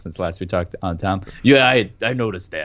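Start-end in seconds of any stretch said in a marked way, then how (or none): 1.4-2.7 gravelly, gritty voice. Playing Aunt Tom, agreeing the voice got rougher: gravelly Aunt Tom voice. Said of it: "Your voice got a little gravelier".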